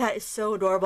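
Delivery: ordinary talk, nothing marked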